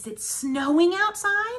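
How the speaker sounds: tune lifting gently on "outside". Showing how a question sounds, slight rise at the end. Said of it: "See how my voice went up a little bit?".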